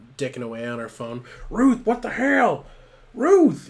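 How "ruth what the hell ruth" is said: furious, very loud, very high, drawn-out scream. Retelling a man yelling at Ruth, who ignores him on her phone, retelling a scream. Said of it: "And he's just screaming".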